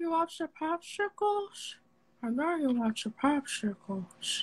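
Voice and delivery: sleazy, creepy character voice. Showing the others a few voice impressions: Trevor the Pervert voice. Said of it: "So there's Trevor the Pervert".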